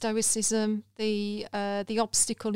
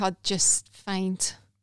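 ordinary talk, nothing marked

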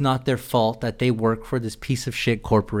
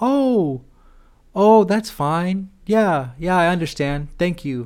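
fake polite customer-service tone, high and slow; 7 semitones higher than usual. Retelling holding back from yelling by using a fake polite voice. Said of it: "I just do the fake polite voice".

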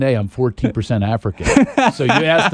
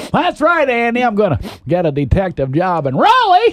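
put-on animated voice, high, swooping up and down; 7 semitones higher than usual. Recalling the show's character moving to Raleigh, the speaker does a Barney Fife impression. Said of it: "I did a Barney Fife impression".

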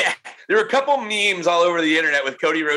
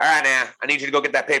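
put-on Southern accent; 3 semitones lower than usual. Recalling a former boss's dismissive way of talking, imitating a Southern boss. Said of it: "And he was Southern".

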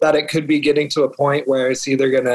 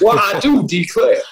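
pitched-up cartoon rooster crowing voice; 6 semitones higher than usual. Riffing on a mentioned name with a quick line: Foghorn Leghorn voice. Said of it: "Foghorn Leghorn".

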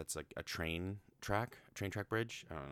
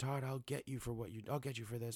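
put-on angry dog character voice, higher; 7 semitones higher than usual. Retelling a cartoon scene where Copper thinks Chief died: imitating Copper, furious. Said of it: "super pissed".

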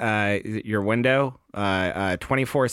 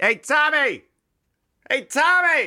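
very high-pitched, very slow, drawn-out calling yell; 3 dB louder than usual. After driving onto the field, calling out to Tommy, yelling. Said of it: "I had to yell at you".

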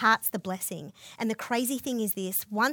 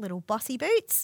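plain

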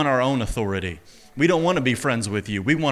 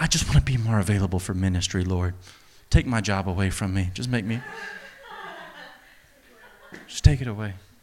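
mock pleading, low and swooping, self-parodying; 4 semitones lower than usual. Speaker parodying his own past way of praying, mocking his own praying. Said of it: "I'm mocking myself right now".

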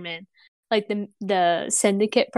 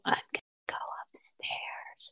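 slow, very quiet, hushed whisper. Voicing a character telling another she will go upstairs: whispering. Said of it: "whispers it as she's kind of pointing".

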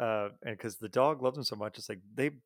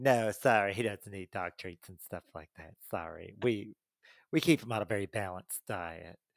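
mock-snooty put-on voice; 3 semitones lower than usual. Offered a dog treat at PetSmart, a snooty dog owner replies: mock-snooty dog owner voice. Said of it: "Everybody has that voice when they talk about that customer".

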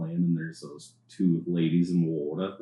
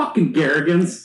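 put-on shrill, very high, loud New Jersey accent; 10 semitones higher, 8 dB louder than usual. Retelling two ladies seen in the water after the pile: jersey accent impression. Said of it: "That was the best Jersey impression right there".

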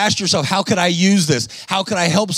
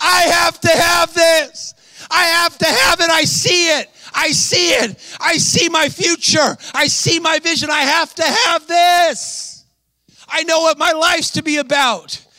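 mock very high, stretched-out, drawn-out screaming; 11 semitones higher than usual. Retelling what she screamed in the office: imitating her screaming. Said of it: "She starts screaming".

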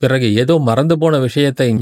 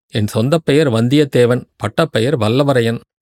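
usual speaking voice

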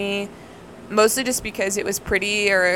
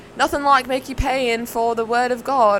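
put-on British accent; 4 semitones higher than usual. Retelling what a British man said while checking out a Bible: put-on British accent. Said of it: "That was a really good British accent on my part".

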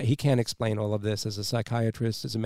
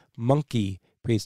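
normal talking voice

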